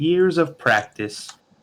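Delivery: squeezed-out little high voice. Voicing a puppet answering a child: different little puppet voice. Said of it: "a different little voice comes out".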